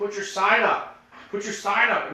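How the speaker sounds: high, loud shouting at the top of the lungs. Retelling how a friend yelled during a commercial break: imitating a friend yelling at full volume. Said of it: "he's just yelling it, like, at the top of his lungs".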